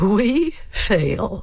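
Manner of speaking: dry sarcastic delivery. Demonstrating how punctuation changes a two-word line, sarcastic.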